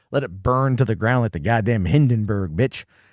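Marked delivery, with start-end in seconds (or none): none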